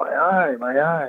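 slow, anguished, pained cry. Recalling lying on an ER gurney when an eye suddenly hurt, retelling own screaming in pain. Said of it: "And I'm screaming".

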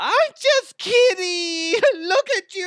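very high, slow, loud squealing voice.

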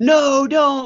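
mock yelling. Recounting a funny scene where he calls someone back, retelling a yell. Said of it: "he yells".

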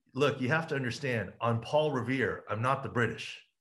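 ordinary talk, nothing marked

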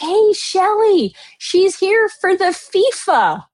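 mock very high shout. Imitating the woman doing her nails calling to Shelly three chairs over: raised voice. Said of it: "has to raise her voice".

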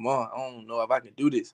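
quiet acted crying. Recalling calling their mama at fifteen, retelling crying to mom. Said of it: "I used to call my mama crying".

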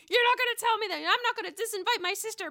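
shrill, very high, full-volume screaming. Describing Leah getting up off her chair, acting out her: retelling a scream. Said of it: "just screaming like".

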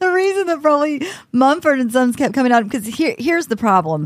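talking through laughter. Explaining why one band kept coming up, laughing while talking. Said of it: "sorry, I'm laughing".

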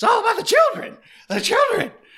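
worked-up, animated, very high swooping pitch, voice cracking. Mocking a speech by Jimbo Fisher: animated Jimbo Fisher impression. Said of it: "how he talks when he gets real animated".

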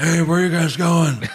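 put-on gritty superhero voice. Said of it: "I'm Nicolas Cage as Spider-Man".

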